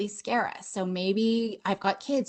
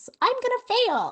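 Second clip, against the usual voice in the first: very high squeaky cartoon mouse voice. Saying your stress story in a funny voice: Mickey Mouse voice. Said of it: "in a funny voice, like Mickey Mouse".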